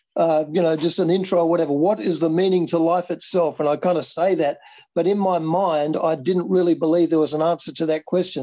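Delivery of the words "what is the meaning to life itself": usual speaking voice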